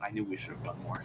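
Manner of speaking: muttered whisper under the breath. Muttering a line in character during the game, whispering under breath. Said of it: "I'm gonna whisper under my breath".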